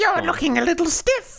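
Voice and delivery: storybook witch voice, pitched very high. Voicing Grandma's comic-strip line when asked: Wicked Witch of the West voice. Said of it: "Like that?".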